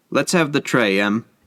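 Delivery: plain reading voice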